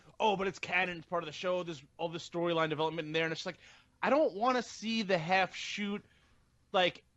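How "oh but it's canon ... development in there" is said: normal talking voice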